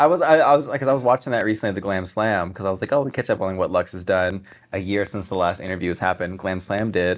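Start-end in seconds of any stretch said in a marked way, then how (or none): none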